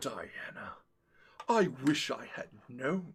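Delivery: dropped deep villain voice. Retelling a game scene, voicing the mage: voice dropped to Megatron from Beast Wars. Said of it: "my voice dropped literally to Megatron's from Beast Wars".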